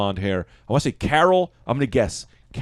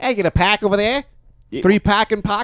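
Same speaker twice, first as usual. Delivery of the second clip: put-on Boston accent, pitched very high; 9 semitones higher, 3 dB louder than usual. Doing their own version of a commercial, in a Boston accent. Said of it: "We'll do Boston".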